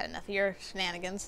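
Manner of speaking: normal talking voice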